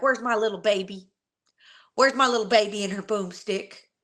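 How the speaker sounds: silly, goofy, teasing fatherly voice. Retelling how dad used to call out: imitating dad's silly call. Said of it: "my dad's so silly. He'd be like".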